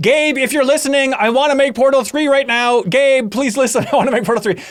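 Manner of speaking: high-pitched scream. Reminding the person addressed of their podcast outburst years ago: retelling a scream. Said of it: "just grabbed the microphone and started screaming".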